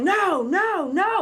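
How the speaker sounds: loud high-pitched yell. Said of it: "So I'm yelling".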